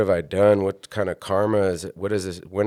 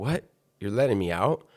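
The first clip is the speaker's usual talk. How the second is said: imitated sobbing, crying voice. Retelling being let out of jail by the judge: retelling own crying.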